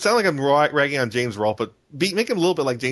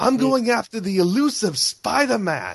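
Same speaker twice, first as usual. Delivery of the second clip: bad put-on Australian accent, higher pitch; 10 semitones higher than usual. Pitching Kraven the Hunter as Steve Irwin: Steve Irwin voice. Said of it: "I can't do an Australian accent".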